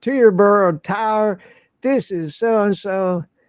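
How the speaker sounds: imitated slow Southern drawl. Retelling a pilot calling the tower: imitating a slow Southern drawl. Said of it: "slow Southern drawl".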